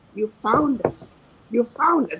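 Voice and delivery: put-on tearful, broken-down voice. Retelling what a man said after a speech, imitating a man breaking down in tears. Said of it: "he just broke down and said".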